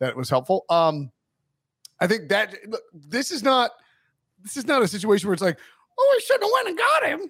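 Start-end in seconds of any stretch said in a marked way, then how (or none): 6.0-7.3 voice pitched very high. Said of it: "do you like that".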